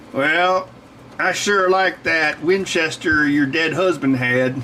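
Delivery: folksy western cowboy voice. Telling a family story, quoting an uncle: Uncle Bud in a cowboy voice. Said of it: "I don't know why I gave him a cowboy voice".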